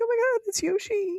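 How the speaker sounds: mock very high, weepy, tearful crying voice. Retelling watching Yoshi hatch in a movie: imitating own past crying. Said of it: "and I'm, like, crying. I'm like".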